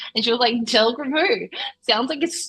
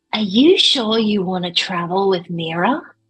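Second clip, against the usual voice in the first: whispered line in a character voice; 3 semitones lower, 3 dB louder than usual. Asking another character a private question in the game: whispering in character. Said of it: "I'm gonna whisper to Delgrim".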